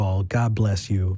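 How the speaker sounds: slow, sarcastic. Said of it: "I never got a sarcastic".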